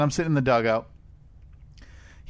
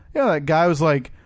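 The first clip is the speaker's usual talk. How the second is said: normal talking voice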